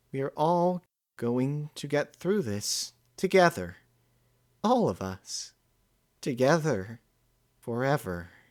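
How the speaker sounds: muted, far-off sound. Reading a story, Twilight speaks to her friends under the shield, in a subdued tone. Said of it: "None of them were able to follow what [name] was saying, / and the subdued tone she was using only served to further their confusion. / [name]'s voice echoed out, her last sentence repeating over and".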